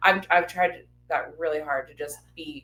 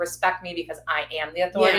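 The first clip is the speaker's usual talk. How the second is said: ordinary talk, nothing marked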